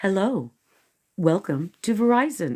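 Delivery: choppy machine voice, catching between words. Showing the other speaker how the greeting should go, halting Verizon AI greeting. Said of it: "like you're halting a little bit, like A I".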